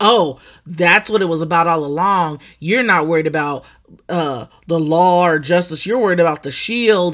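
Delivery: plain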